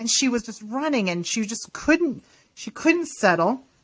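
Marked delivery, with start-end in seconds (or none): none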